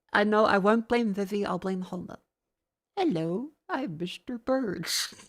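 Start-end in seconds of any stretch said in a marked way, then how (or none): 2.9-5.0 slow, drawn-out, swooping cartoonish put-on voice. Doing a voice stuck in their head from Homer Simpson: Homer Simpson voice. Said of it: "Fucking Homer Simpson has ruined my vocabulary".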